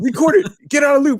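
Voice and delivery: mock yell, high and loud.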